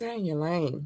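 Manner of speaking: very calm, soft, composed and measured voice. Giving others a fair warning to stay in their lane; very calm. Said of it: "I'm saying this very calmly right now".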